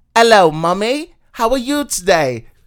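put-on British accent, very high and loud. Imitating a friend's daughter in England, in a British accent. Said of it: "That's my British accent".

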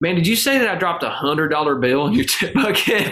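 put-on heavy Mississippi accent, laid on thick. Retelling what a man said after hearing the speaker's story: thick Mississippi accent. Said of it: "real deep Mississippi accent".

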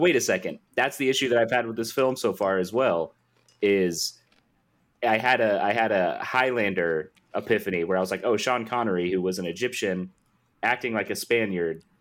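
normal talking voice

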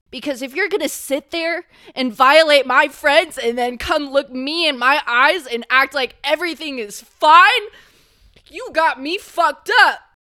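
furious, upset angry yelling, loud and high. Recording an episode for listeners, the speaker is yelling angrily. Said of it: "I'm sorry, I'm yelling".

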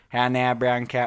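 attempted Chicago accent. Asked how a phrase sounds in a Chicago accent, trying it out: Chicago accent. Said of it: "how would you say a Chicago accent".

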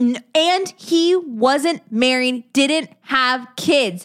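emphatic all-caps delivery. Discussing an organization's leader, the speaker says it in all caps. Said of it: "I'm saying that all caps in my voice".

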